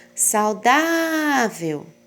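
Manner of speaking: shouted out, saudável stressed on dá. Teaching word stress, calling 'saudável' as if outside a friend's house, stressing 'dá'. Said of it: "Quando eu grito ela, como se eu fosse chamar ela na frente da casa... O mais forte é aqui onde está o acento".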